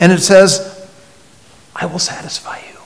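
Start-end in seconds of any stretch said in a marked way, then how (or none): 1.7-2.8 fast, soft, tempting, luring whisper. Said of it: "temptation comes and whispers".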